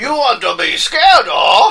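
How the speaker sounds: clumsy, failed put-on Cajun accent, high and loud. Joking with others while admitting they can't do it, bad Cajun accent. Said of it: "I can't even do a Cajun accent".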